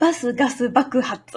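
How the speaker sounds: quick run-through at tongue-twister pace, each word clear. Teaching a Japanese tongue twister, repeating it faster the second time. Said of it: "And now faster".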